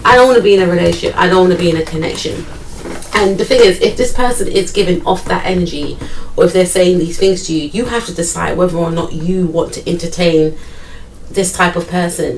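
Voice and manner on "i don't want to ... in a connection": fast, offhand, careless brush-off. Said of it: "so nonchalant".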